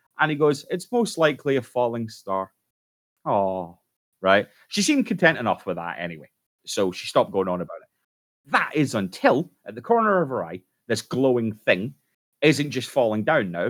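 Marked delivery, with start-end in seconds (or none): 0.7-2.5 tender, romantic, gently reasoning tone. Retelling a story, speaker quotes a man reasoning with a woman; mock-romantic tone. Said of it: "he reasons with her in a quite romantic way".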